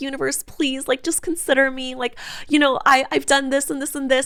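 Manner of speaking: mock very high, pleading, imploring voice. Acting out a mindset of asking the universe for money: mock begging and pleading. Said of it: "I'm begging and I'm pleading".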